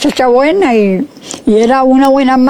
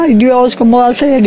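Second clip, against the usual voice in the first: ordinary talk, nothing marked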